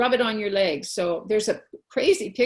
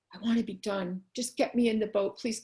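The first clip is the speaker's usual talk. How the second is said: acted-out earnest, begging, pleading voice; 5 dB quieter than usual. Retelling a swim, asking the coach to be let into the boat: retelling a plea. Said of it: "And I was begging".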